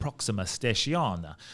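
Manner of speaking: put-on Italian accent. Quoting a friend's phrase heard at a train station: imitating an italian accent. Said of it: "Why was he Italian just then?".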